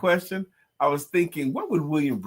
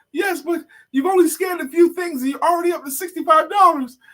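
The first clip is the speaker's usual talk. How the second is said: very high, loud, out-of-breath panting; 14 semitones higher, 5 dB louder than usual. Retelling a cartoon customer at the register: imitating a customer panting. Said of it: "she's, like, panting and all that stuff".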